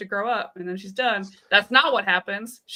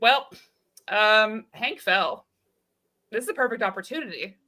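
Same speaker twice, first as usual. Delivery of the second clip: mock laid-back, easygoing, unbothered calm delivery. Retelling what a man told the head scientist, imitating a chill, calm voice. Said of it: "He's just very chill".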